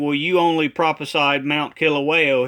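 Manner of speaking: usual speaking voice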